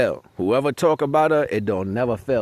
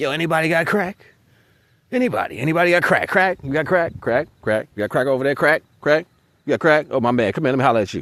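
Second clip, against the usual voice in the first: strung-out addict voice calling out loudly; 3 semitones higher than usual. Comparing people who talk too much to a crackhead: imitating a crackhead. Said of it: "like a crackhead running in the city".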